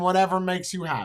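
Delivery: high, sarcastic, plainly insincere voice. Showing how a reply to a man would sound: sarcastic. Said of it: "so you know I'm being sarcastic".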